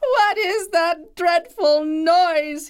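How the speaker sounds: very high, agonized, anguished wail of pain. Reading a tale, Don Demonio flies out from a pillow as bells ring: crying out in agony. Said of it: "he cried writhing in pain".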